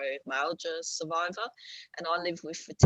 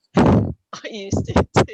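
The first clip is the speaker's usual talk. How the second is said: laughing through the words, very loud and high; 5 semitones higher, 13 dB louder than usual. Speaker admits to the listener they once did the same, laughing while talking. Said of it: "I'm sorry I'm laughing".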